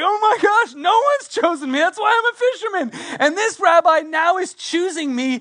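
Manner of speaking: put-on excitement. Retelling Peter hearing the rabbi choose him: imitating excited Peter. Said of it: "he got all excited".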